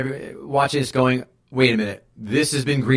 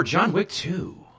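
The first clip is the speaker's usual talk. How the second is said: put-on announcer-style voice; 6 semitones higher, 4 dB quieter than usual. Saying the film title while asking someone for a number, in announcer voice. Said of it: "Announcer voice there".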